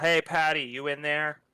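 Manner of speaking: casual, easy calling-out voice. A player's character calling out to Patty from the edge, a magically amplified yell. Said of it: "make my voice super loud and just yell".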